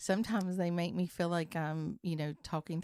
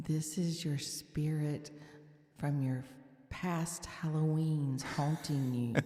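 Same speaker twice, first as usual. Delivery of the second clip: spooky, eerie ghost voice. Playing a spirit from past halloweens haunting the other speaker: spooky spirit voice. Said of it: "let me be a spirit then".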